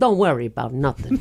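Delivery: put-on Italian voice, pitched way down. Retelling what James Dolce said when someone panicked about filming: imitating James Dolce. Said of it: "See how she made her voice?".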